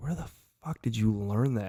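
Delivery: plain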